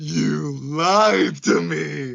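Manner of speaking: high, rough, raw, very loud scream. Recounting a scene, imitating a man's scream. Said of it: "And he just screams of like".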